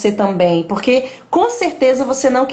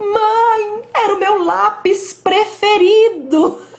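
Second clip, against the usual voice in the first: put-on crying child, very high, very slow, long "Mãe"; 9 semitones higher than usual. Retelling her six-year-old son's words about his broken pencil: imitating a child crying. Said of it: "E ele chorando".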